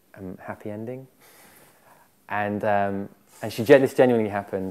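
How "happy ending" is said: soft half-whisper right at the ear. Retelling what a woman half-whispered in their ear during a back rub: imitating a half-whisper. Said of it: "she whispers in my ear".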